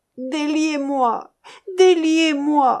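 sudden, loud, high shouted outcry. Carfor, tied up with a fuse and being questioned, crying out. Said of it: "S'écria Carfor".

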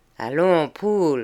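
ordinary delivery

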